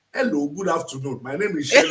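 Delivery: put-on Nigerian-accented speech. Lecturer tells Magdalene how he spoke when he came from Nigeria: Nigerian accent. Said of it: "I used to speak like this".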